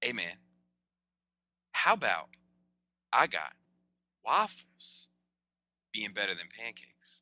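slow drawn-out way of talking. Doing an impression of a friend with a speaking rhythm: imitating Money Back Sean. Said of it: "a pretty good impression of him".

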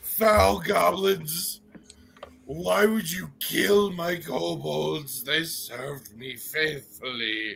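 guttural growling while eating, mouth full. Game master voicing a dragon busy swallowing its meal, guttural growling while eating.

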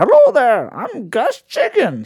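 very high-pitched, long drawn-out delivery. Retelling a skit in which a performer dressed as an old timey prospector: Old Timey Prospector voice. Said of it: "dressed up as an old timey prospector".

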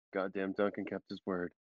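muttered quietly under the breath. Retelling a remark the speaker muttered to themself, under the breath. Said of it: "I just like under my breath".

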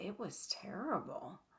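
put-on muttering under breath. Recapping a cooking show, quoting a judge's aside to the other judges: imitating muttering under breath. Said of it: "kind of under his breath says".

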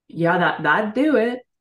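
put-on slow, unfazed, matter-of-fact deadpan. Retelling a group answering a soul's proposal, imitating a deadpan reply. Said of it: "look at this soul like deadpan".

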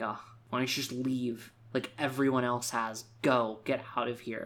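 ordinary talk

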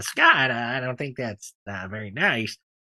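hesitant, halting voice with many uhs. Telling a story about a friend, doing a John impression. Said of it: "I'll do a little John impression".

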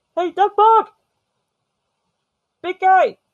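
high, loud hollering yell. Calling out for a character in a game who might be nearby: yelling. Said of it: "I'm just yelling".

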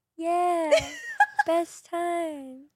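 put-on tipsy, slurring, stretched-out voice. Retelling how a drunk partner answered: imitating drunk voice. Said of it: "that's exactly what you sound like".

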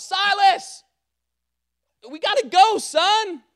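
long, very high, slow, drawn-out hollering scream. Father retells calling his son silas to leave the house: retelling screaming at his son. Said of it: "I'm just screaming".

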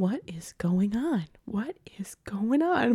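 quiet, baffled, confused murmur under the breath. Retelling what she kept saying as each person took a turn, imitating quiet confused muttering. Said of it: "she's saying it so quietly because she's so confused".

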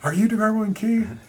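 very high, loud, thrilled, starstruck excitement. Retelling greeting band members getting out of a van; acting out excitement. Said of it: "I got all excited".

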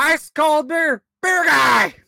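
shrill, very high, loud vendor's yell. Recalling ballgame beer vendors, a speaker mimics their call, yelling like a beer vendor. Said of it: "walking around yelling beer".

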